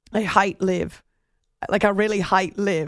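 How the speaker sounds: put-on Irish accent. Quoting a golfer's view of LIV, speak in a Rory McIlroy Irish accent. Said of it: "in his Irish accent".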